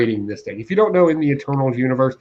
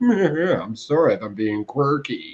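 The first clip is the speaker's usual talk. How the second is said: mock pretentious British accent, male voice; 4 dB quieter than usual. Imitating a comic's narrator voice: pretentious British guy voice. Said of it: "It sounds like a pretentious British guy".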